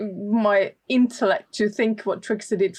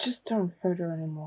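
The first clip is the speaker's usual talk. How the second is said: hushed, very quiet mutter forced through gritted teeth; 3 semitones lower, 9 dB quieter than usual. Speaking aside to a companion so she cannot hear, through gritted teeth. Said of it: "say it very like between my teeth".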